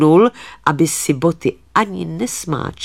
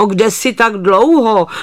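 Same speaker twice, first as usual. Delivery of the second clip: cross, scolding, grumpy, high-pitched voice; 5 semitones higher, 4 dB louder than usual. The housewife calls to the herdsman who came home late, calling out grumpily. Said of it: "volá hospodyně Nevrle".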